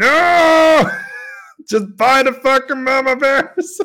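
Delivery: acted, shrill, high, drawn-out scream. Recounting watching a player's move, the speaker acts out retelling own scream. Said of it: "I'm screaming there like".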